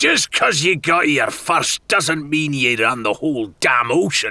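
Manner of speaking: snarling angry pirate voice. In a story, a furious pirate snarls at another pirate: furious snarl. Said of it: "He came in close behind the furious pirate, / [name] snarled".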